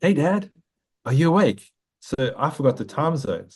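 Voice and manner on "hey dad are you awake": put-on tiny, small, high little-kid voice. Retelling hearing a voice through the iPad at night: imitating a little voice. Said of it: "I hear this little voice".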